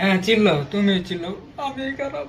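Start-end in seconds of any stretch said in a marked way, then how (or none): 1.7-2.3 high, soft, tearful whine. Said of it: "কাইন্দেন না".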